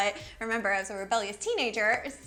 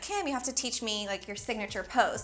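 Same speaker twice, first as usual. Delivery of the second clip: ordinary talk, nothing marked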